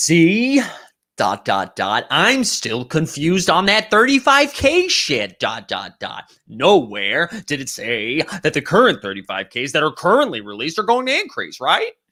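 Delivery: disrespectful, swooping, animated sing-song mocking voice. Reading out a viewer's chat comment aloud: Frank impression. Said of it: "That was my Frank impression".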